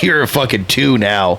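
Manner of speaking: plain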